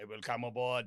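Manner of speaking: attempted put-on German accent, low and soft. Acting out a U-boat captain brought to a Chicago museum, attempted German accent. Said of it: "is that my German accent?".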